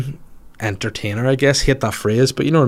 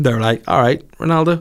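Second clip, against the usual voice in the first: plain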